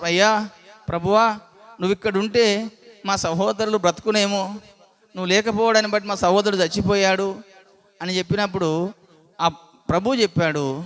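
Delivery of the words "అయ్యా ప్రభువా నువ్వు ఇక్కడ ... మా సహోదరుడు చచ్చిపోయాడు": usual speaking voice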